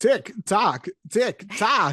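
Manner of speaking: drawn-out pirate voice. Imagining Christopher Walken playing Captain Hook: Christopher Walken as Captain Hook. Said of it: "Christopher Walken as Captain Hook".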